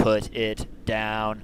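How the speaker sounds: menacing, aggressive robotic voice. Voicing a robot stepping too close to a player: aggressive robot voice. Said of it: "as aggressive a tone a robot can take".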